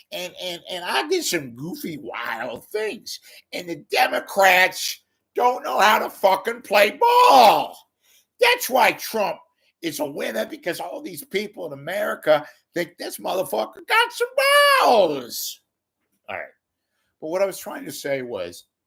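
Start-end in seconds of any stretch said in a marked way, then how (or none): 0.1-15.6 slow, drawn-out, swooping, sing-song Louisiana drawl. Speaker does a bit talking about Trump as a James Carville impression. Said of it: "this is my impression of James Carville talking about Trump".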